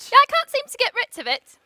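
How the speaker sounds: put-on easy, plain, conversational British accent. Answering a friend's question about her voice: British accent. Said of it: "Are you still speaking with a British accent?".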